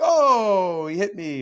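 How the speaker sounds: high, loud hammed-up cry. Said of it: "hams it up".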